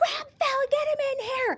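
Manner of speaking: urgent, very high yell. Recalling screaming down the hallway to a doctor during a Zoom call: retelling an urgent scream. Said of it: "I am screaming out her office".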